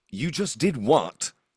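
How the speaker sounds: very loud yelling. A soft-spoken character raises his voice for the first time, raised voice. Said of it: "the first time he's raised his voice".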